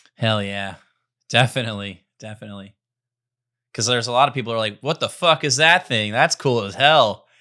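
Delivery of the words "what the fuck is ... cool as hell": loud put-on rural country drawl. Imitating people seeing the giant robot: put-on redneck voice. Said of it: "I don't know why I made that guy a redneck".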